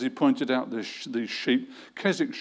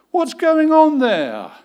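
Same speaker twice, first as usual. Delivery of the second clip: very high, very loud, booming, shrill, alarmed shout; 11 dB louder than usual. Telling a story, the boss hears a helicopter in the background: alarmed shout. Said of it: "the boss shouted".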